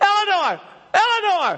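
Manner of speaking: full yell, as loud as possible, very high.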